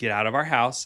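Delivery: ordinary talk, nothing marked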